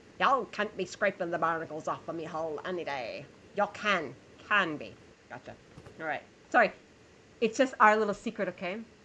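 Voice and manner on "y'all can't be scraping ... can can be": full put-on pirate character voice. On National Pirate Day, the speaker briefly slips into a pirate voice. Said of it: "I brought out the pirate voice".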